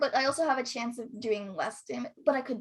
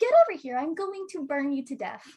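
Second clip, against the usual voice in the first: put-on cutesy anime-girl voice; 5 dB louder than usual. Describing a character's voice, then doing Empress character voice. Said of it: "and then she's just like".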